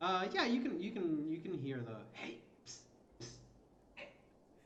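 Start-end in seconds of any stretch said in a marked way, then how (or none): 2.1-4.1 barely voiced, breathy, hushed stage whisper shout. Acting out the player's call to Robin: whisper shouting. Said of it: "whisper shout for Robin".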